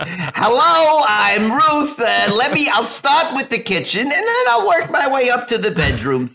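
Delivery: put-on very high-pitched old lady voice.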